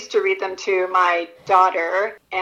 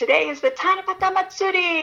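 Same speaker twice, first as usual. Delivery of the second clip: thrilled, excited, very high-pitched shriek; 11 semitones higher than usual. An author reading her book aloud voices the young girl's line, screaming.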